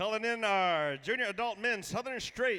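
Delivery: loud, high-pitched emcee announcer voice.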